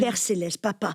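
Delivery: ordinary delivery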